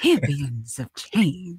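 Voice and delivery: low-key, sermon-style preaching proclamation. Teasing a co-host by repeating the co-host's words as a preacher. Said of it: "the preacher, he was like".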